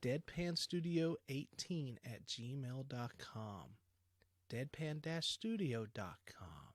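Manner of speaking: public-radio style read, asmr-like voice. Reading out the show's email addresses to listeners in an ASMR-like voice. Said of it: "Do I sound like an A S M R voice doing that?".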